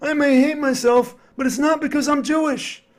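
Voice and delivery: strained, forced sitcom delivery. Retelling Larry's reply to a guy who yelled at him: strained Larry David impression. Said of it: "sort of like a strained Seinfeld impression".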